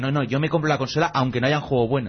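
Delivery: normal talking voice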